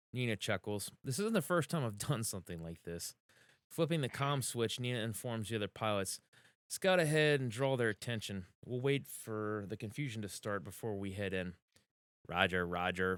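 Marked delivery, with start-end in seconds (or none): 12.3-13.2 sarcastic, mocking robot-style droid voice. Narrator reading a character's reply to a comm order, in a mocking droid voice. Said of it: "Aya says in a mocking droid voice".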